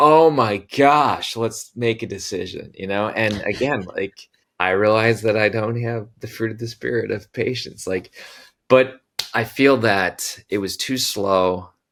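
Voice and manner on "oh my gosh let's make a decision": high, loud, drawn-out, impatient exasperated outburst. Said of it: "I'm like".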